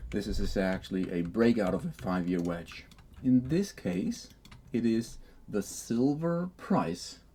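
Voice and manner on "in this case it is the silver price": slow, drawn out, each word deliberately weighed. Pointing out what the chart shows, speaking slowly. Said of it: "I'm saying it slowly".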